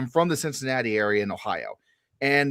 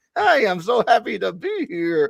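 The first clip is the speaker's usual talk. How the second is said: mock awkward dad voice, higher; 8 semitones higher than usual. Imitating someone just off the plane: imitating an awkward dad. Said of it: "like an awkward dad showing up to a dance".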